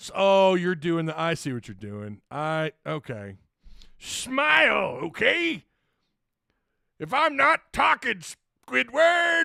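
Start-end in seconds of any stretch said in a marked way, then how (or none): 4.0-9.4 high cartoon voice, "smile" stretched out. Reading a viewer's message aloud in Mister Krabs' voice. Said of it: "my Mister Krabs is not as good".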